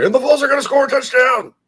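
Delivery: very high-pitched, fast, thrilled, excited voice. Previewing the game's broadcast crew, imitating the excited Chris Fowler voice. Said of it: "the Chris Fowler excited voice".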